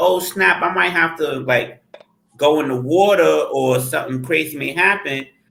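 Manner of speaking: ordinary talk, nothing marked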